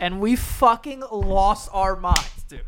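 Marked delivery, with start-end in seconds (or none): none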